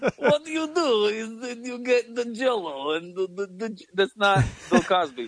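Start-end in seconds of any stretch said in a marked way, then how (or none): 0.2-3.8 mock Ukrainian accent, much higher pitch. Riffing with co-hosts on a hypothetical, doing Marlon Brando with a Ukrainian accent. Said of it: "if Marlon Brando was from the Ukraine".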